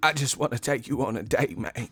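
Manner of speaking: put-on teary, dramatic voice. Imitating an actor in a romantic comedy: Terrence Howard voice. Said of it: "you always sound the same".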